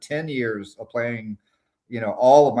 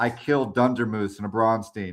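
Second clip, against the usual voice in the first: put-on proud, boastful tone. Retelling a player's boast about a kill: imitating proud boasting. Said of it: "He was so proud".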